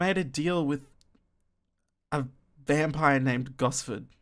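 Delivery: grumbling, father-like voice. The narrator voices the father, who looks at the listener and speaks: grumbling. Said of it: "The father makes it grum makes it grumbles".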